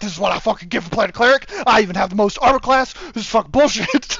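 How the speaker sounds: grumbling, griping tone. Retelling how the cleric's player reacts to being targeted first: imitating the cleric player complaining. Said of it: "He's like".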